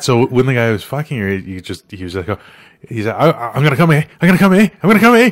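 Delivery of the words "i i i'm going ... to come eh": put-on Newfoundland accent, pitch way up, loud. Retelling a line from their video: imitating a newfoundland accent. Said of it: "Like this".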